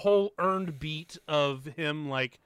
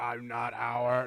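put-on sinister voice, lower, slower; 4 semitones lower than usual. Talking about a movie, the speaker quotes a character in a mock-sinister voice. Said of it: "when he does the whole sinister voice".

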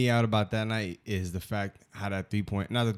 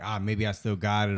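ordinary talk, nothing marked

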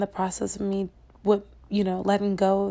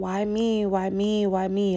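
acted-out crying, slower. Speaker recounts hitting the steering column and asking God, retelling crying. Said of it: "I'm hitting the steering column and I'm crying".

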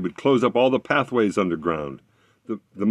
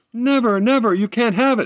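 shrill, very high-pitched screaming; 14 semitones higher, 4 dB louder than usual. A narrator reads the sprite answering the fiddler's demand: screamed. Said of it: "screamed the sprite".

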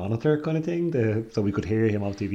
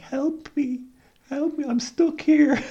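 put-on little girl voice, much higher; 3 dB louder than usual. Recounting a horrible voice that was heard, little girl's voice. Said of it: "like this like little girl's voice being like".

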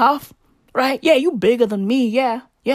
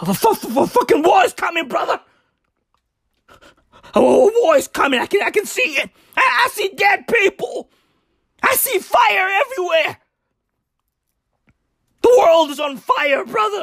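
pitched-up raving rant like a maniac; 6 semitones higher than usual. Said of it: "I'm out here sounding like fucking Alex Jones".

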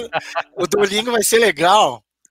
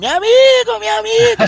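put-on shout, much higher and louder; 5 dB louder than usual. Recounting his São Paulo marathon finish, retelling Kiki's shout. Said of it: "com o Kiki gritando".

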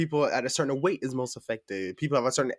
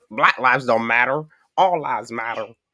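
fake, put-on American southern accent; 4 dB louder than usual. Speaker imitating a woman's remark, in a southern accent. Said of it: "She does a southern accent".

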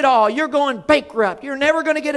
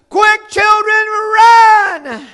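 loud, high scream, "run" stretched long; 7 semitones higher, 7 dB louder than usual. Retelling how she screamed at the children playing with baby skunks: retelling a scream at top of voice. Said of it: "she just screamed to the top of her voice".

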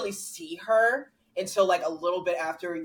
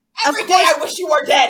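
mock, acted-out screaming; 10 semitones higher, 13 dB louder than usual. Citing a showy film performance from Marriage Story, imitating Adam Driver screaming. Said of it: "Adam Driver screaming".

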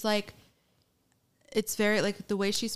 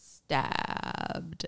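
stabbed stretched slow and whispered. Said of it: "draws out the word".

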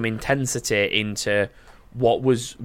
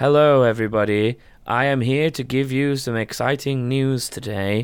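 put-on gloomy, dejected, depressed voice, slow. Imitating the translator of the Nintendo presentations: imitating a depressed translator. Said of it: "really depressed about everything".

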